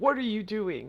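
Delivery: loud, forceful, high booming bellow. Explaining onomatopoeia by acting out a man shouting at a woman, booming shout. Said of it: "So that would be a booming voice".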